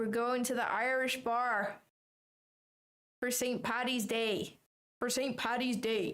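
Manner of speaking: put-on, attempted Irish accent. Asked by the others for his best Irish accent: attempted Irish accent. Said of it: "Give us your best Irish Irish accent".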